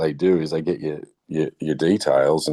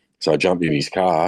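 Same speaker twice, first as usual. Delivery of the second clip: usual speaking voice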